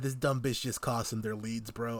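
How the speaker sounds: ordinary talk, nothing marked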